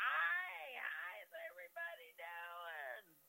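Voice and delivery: put-on loud voice. Telling how she came in the back door greeting everyone, imitating her loud voice. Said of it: "with her typical loud voice".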